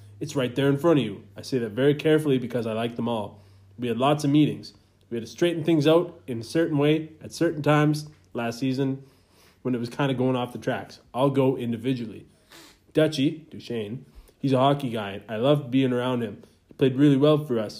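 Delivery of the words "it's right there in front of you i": usual speaking voice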